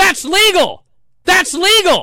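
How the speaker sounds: screaming out loud.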